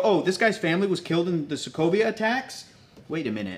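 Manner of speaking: plain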